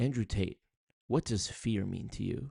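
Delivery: dead-serious, straight-faced interviewer-style delivery. Imitating an interviewer asking Andrew Tate a question: imitating Jack Neal, so serious. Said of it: "so serious, he's like".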